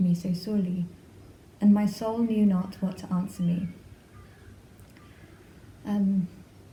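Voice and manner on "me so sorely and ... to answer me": plain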